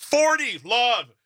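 high-pitched, exaggerated mock yelling out. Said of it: "just start sh-, yelling".

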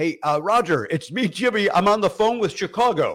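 loud, put-on shouted holler. Retelling calling out to Roger Ebert from a payphone, retelling his own yell. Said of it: "I yelled to him".

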